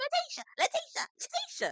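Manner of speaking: very high, squeaky, tiny little voice. Retelling how a man kept calling someone's name, imitating his tiny voice. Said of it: "he talked that tiny voice".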